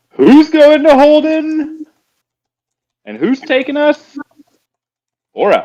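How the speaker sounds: very high, booming, bellowing yell. Telling what their character does in the game, the player calls out in a booming yell. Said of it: "And I yell".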